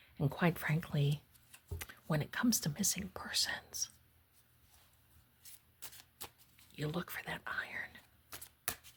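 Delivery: very quiet, hushed, secretive whisper. Explaining what to look for with missing persons: whispering. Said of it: "Why am I whispering?".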